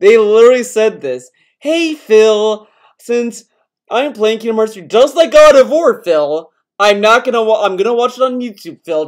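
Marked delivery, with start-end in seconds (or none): 1.6-9.1 derisive, mocking put-on voice. Retelling what viewers message about watching on youtube: mocking imitation of viewers. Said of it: "they talk like that".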